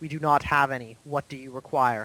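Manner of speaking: dropped, low-register, deep voice. Voicing the thing that asks the players what they require, in a low voice. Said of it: "it speaks to you in a low voice".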